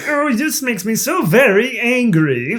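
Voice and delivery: very high-pitched cartoon alien spaceman voice. Recalling Bugs Bunny cartoon characters, doing a Marvin the Martian voice. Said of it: "They got Marvin Martian".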